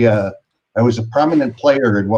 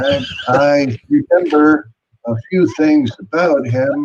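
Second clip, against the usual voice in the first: put-on high, prattling, rambling, chatty old man voice; 5 semitones higher than usual. Doing an impression, as an old guy prattling: Biden impression. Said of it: "that's my Biden".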